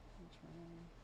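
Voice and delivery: soft speaking.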